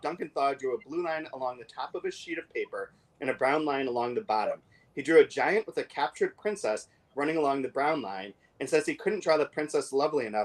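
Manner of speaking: ordinary talk, nothing marked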